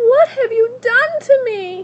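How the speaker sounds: shrill, very high-pitched squealed cry. Narrator reading a fairy tale, the princess turned into a warthog: squealing. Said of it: "Squealed the princess".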